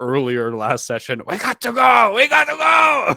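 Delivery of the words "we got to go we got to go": very loud, very high, drawn-out yell. Playing a character grappling an ally toward the cave: shouting. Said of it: "just shout out like".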